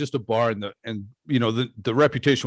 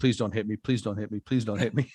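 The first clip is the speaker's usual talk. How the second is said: put-on pleading, begging voice, quieter; 4 dB quieter than usual. Retelling being a bouncer facing a guy: imitating own begging. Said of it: "On that note of me begging for my life".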